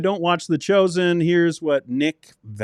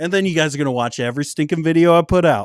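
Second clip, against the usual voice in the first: normal talking voice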